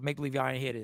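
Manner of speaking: very hushed, secretive stage whisper. Sharing a joking secret with the others in a pretend whisper. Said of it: "I'm whispering this here".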